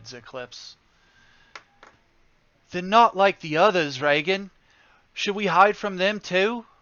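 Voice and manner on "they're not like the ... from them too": put-on high, small young-boy voice. Narrating a scene, voicing a stuffed purple dragon on a bed in a small boy's voice. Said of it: "you hear a small boy's voice".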